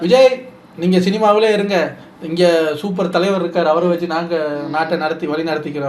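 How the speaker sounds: ordinary delivery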